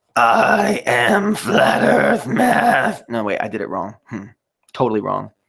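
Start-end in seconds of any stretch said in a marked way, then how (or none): 0.1-3.0 very high, drawn-out rock voice.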